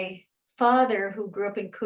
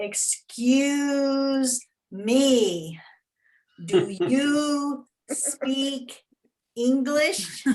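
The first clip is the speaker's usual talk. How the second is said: very loud, very slow, high, booming, "me" stretched; 5 semitones higher than usual. Retelling how a man at the desk asked this, in a very loud, slow voice. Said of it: "very loud, slow voice".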